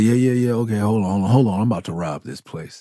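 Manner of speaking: relaxed, offhand, laid-back street-style casual talk. Retelling a movie scene as Blizzard announcing a robbery: real casual Blizzard voice. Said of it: "it was real, real casual".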